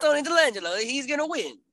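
put-on overdone Italian accent, pitched way up. Predicting a match winner: terrible Tony D'Angelo impression. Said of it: "That was a terrible impression".

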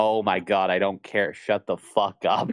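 mock-angry, acted-out anger. Retelling their reaction to a long game cutscene, retelling an angry outburst. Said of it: "I was so mad".

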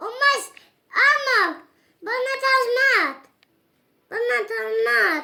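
yelling loudly, pleading.

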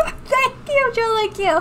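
rising, very high pitch.

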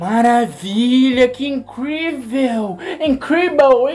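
mock shouting voice. Showing how a gringo would shout in a video: imitating a shouting gringo. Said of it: "de um gringo gritando no vídeo".

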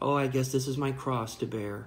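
plain

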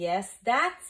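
exclaiming. Reading fiction, Antonius replies to Plupius: exclaimed. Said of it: "Antonius exclaimed".

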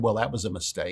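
imitated under-breath mutter. Retelling a new doctor's remark: imitating a mutter under the breath. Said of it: "under his breath".

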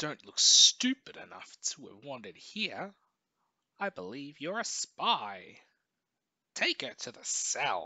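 very loud, high, snarling voice. Reading the character Lot's line in a story, Lot snarling. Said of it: "Lot snarls".

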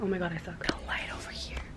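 soft, unvoiced whisper.

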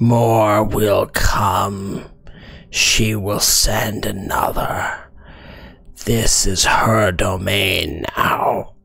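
guttural, throaty voice. A creature answers the question of where the Duchess is, in a guttural throaty voice. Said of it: "It speaks in a very like guttural and throaty common".

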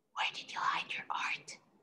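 very quiet, hushed whisper. One character asks another while officers search the house: whispered. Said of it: "whispered Reuben".

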